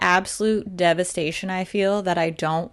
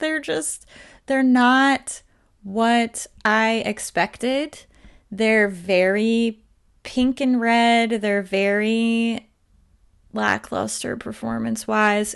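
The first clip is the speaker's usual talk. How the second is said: deflated, beaten-down, defeated voice, very drawn out; 3 semitones higher than usual. Makeup reviewer showing palette swatches to viewers, in a defeated voice. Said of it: "Can you hear the defeat in my voice?".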